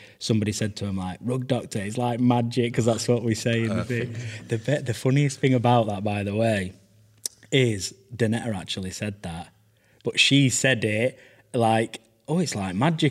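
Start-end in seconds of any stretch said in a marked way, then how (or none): 12.3-13.1 mock offhand tone, a bit quieter and higher. Recalling how Danetta said the phrase in a video: imitating Danetta's offhand quiet delivery. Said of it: "just off the cuff, a bit quieter".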